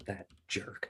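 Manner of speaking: soft, hushed scornful whisper.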